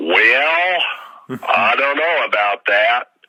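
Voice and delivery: broad Georgia drawl, "well" stretched out. Quoting Gary's reply about a university press book; imitating Gary's Georgia accent. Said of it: "in his Georgia accent, his deep Georgia".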